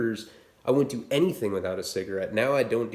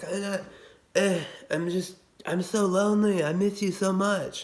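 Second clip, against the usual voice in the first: put-on slurred drunk speech, higher; 9 semitones higher than usual. Retelling a conversation they had while drunk: imitating drunken slurring. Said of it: "I'm slurring to her while I'm talking".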